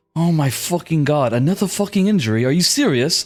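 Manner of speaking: exasperated, fed-up sigh. Voicing Graven, annoyed at another injury: exasperated sigh. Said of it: "as Graven sighs".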